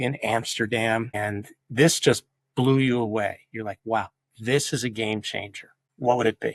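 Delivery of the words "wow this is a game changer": usual speaking voice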